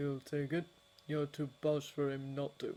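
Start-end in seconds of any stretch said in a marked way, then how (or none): none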